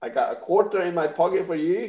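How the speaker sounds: put-on Irish accent. Running a comic auction and putting on an accent again: put-on Irish accent. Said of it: "my Irish accent again".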